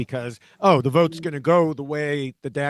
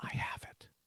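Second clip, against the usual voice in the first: whispered, barely audible. Retelling how a player answered in a quiet moment: imitating a whisper.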